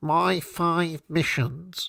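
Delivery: nerdy voice through the nose. Speaker mocks to an audience how a man sounds, imitating a nasal, nerdy voice. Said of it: "He's got a nerdy voice. He's got a nasal".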